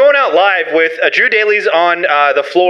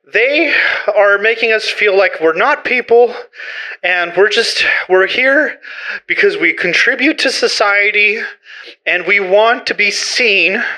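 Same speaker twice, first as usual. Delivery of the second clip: out-of-breath, panting between words. Protester interviewed after walking a few blocks to get there, out of breath. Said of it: "let me just catch my breath real quick".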